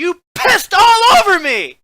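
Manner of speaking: very high, shrill, very loud screech. Telling a story, quoting what the woman beside him said, imitating her screech. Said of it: "And she screeches".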